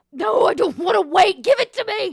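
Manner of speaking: shrill, high, full-volume struggling shout. A bound man struggling against his binds, yelling. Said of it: "he kind of yells".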